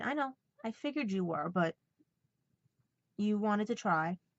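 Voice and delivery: ordinary talk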